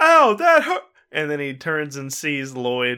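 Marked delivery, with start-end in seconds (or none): 0.0-0.8 sudden, very high-pitched pained outcry. Voicing a character hit by a towel whip: in character, crying out in pain. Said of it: "and he goes".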